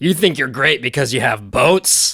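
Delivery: put-on, dead blunt, flat-out delivery. Retelling a movie scene where a character interrupts a serious debate: imitating a blunt delivery. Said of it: "in the most blunt voice".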